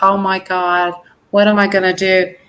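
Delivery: ordinary delivery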